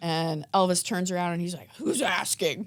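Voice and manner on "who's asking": grouchy, cranky, grumpy reply. Retelling an older man's reply behind the bar: imitating a cranky reply. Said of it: "he was so cranky".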